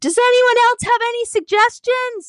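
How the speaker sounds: shrill, loud, high-pitched all-out shout. Retelling a professor standing up on a plane: imitating someone shouting. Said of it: "said as loud as she could".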